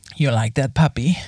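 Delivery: very sexy, low, seductive come-hither voice. Asked by a co-host to give their sexiest voice: sexiest voice. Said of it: "your sexiest voice".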